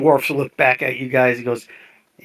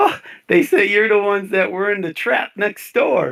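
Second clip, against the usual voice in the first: high voice, chuckling and laughing through words; 8 semitones higher than usual. Voicing a character amused to hear about the trap: laughing while talking. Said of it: "he starts laughing".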